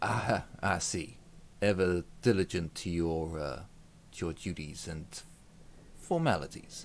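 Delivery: smiling, chuckling character voice. Magnus answers a brother who is making an official report, chuckling while speaking. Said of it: "Magnus kind of smiles and has a little chuckle".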